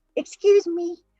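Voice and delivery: put-on high voice of a seven-year-old boy. Imitating a partner saying excuse me after a burp: imitating a seven-year-old boy. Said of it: "like a seven-year-old boy".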